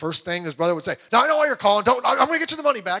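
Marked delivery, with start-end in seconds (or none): 1.1-3.0 high, raised, acted defensive brush-off. Retelling how a man's brother answered his calls about a loan, acting out defensiveness. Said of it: "His brother was real defensive".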